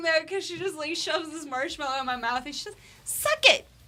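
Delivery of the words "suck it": put-on very high, loud, innocent little-girl voice. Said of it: "this little innocent voice saying".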